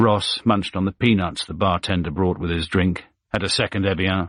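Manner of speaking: ordinary delivery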